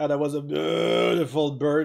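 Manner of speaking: mock words broken by a loud burp mid-sentence. Imitating a friend who burps in the middle of sentences: imitating Mister Bear burping mid-sentence. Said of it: "this is how he sounds like".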